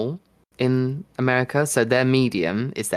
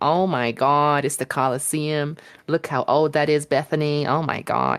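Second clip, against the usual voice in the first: put-on American accent, starstruck and gushing; 3 semitones higher than usual. Describing American tourists at the Colosseum in Italy: imitating loud American tourists. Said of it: "they're just so loud".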